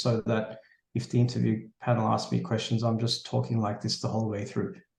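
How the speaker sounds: low, flat, unvaried droning monotone. Giving interview advice, the speaker demonstrates what not to do, monotone delivery. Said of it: "try not to give like monotone answers like this".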